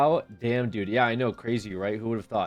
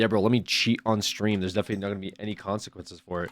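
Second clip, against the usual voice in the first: ordinary talk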